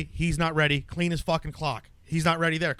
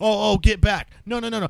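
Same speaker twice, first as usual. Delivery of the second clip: mock yelling, loud and high-pitched; 5 semitones higher, 5 dB louder than usual. Retelling a security guard who yells at the women: imitating a security guard yelling.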